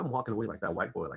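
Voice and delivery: ordinary talk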